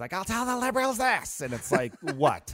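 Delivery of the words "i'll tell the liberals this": very high, shrill, shrieking voice. Imitating a man he cracked up listening to: shrill shrieking voice. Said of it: "He had the shrillest voice".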